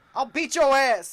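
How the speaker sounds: very loud, high, shrill drawn-out yell. Retelling how a neighbor yells at his dogs: imitating a neighbor yelling loudly. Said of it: "just yelling it so loud that you can".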